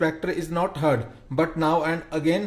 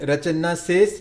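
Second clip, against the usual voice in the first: ordinary delivery, nothing marked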